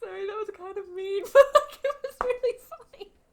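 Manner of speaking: high, loud, laughing through the words. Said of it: "So sorry for laughing with it".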